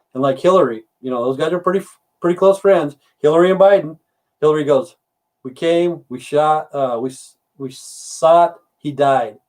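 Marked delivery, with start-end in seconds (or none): none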